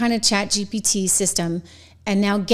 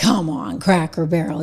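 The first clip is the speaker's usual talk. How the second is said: put-on blustery politician voice, pitched lower; 4 semitones lower than usual. Quoting a politician's post in his new Trump tone. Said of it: "in his new Trump tone".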